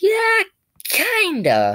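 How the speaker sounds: very high, swooping, stretched squeaky voice. Speaker retells his own answer to a guy's question; retelling in a high-pitched voice. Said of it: "My voice got really high-pitched".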